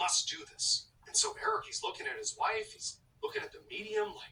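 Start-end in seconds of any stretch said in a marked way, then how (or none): 0.0-0.9 urgent, forceful, almost desperate, nearly pleading. Retelling a possessed wife ordering her husband to dig: imitating a forceful, desperate demand. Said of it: "more forceful and almost desperate".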